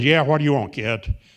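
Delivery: put-on definite New York Bronx accent throughout. Retelling a poker player greeting a kid who walks in: Bronx accent. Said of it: "And a definite Bronx accent".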